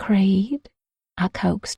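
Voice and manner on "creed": barely above a whisper. Reading a romance scene aloud, calling a name: just above a whisper. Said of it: "just above a whisper".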